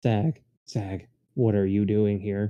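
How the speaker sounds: low, dead-flat monotone with zero inflection throughout. Retelling what someone said at the bar: completely flat monotone. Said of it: "in the most monotone voice possible".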